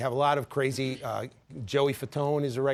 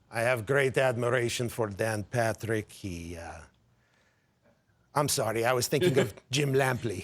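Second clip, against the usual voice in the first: put-on puppet dog voice; 2 semitones lower than usual. Doing a little bit before the break: Triumph voice. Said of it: "You wanna do a little Triumph to break?".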